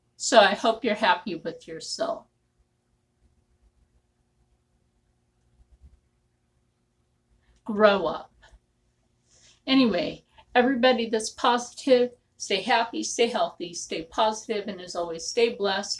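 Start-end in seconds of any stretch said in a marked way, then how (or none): 0.2-8.3 angry, upset telling-off. Telling off a commenter who got you upset: upset and angry. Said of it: "got me upset".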